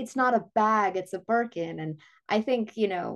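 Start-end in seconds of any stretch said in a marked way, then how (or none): none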